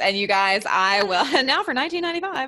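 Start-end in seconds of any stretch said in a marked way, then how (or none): 1.4-2.5 high, fast infomercial pitch voice. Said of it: "my infomercial".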